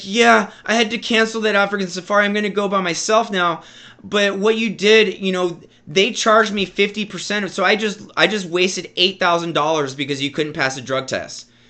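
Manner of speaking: crying, wounded lament. Retelling how dad came to him after the drug test: imitating dad crying. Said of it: "He's, like, crying".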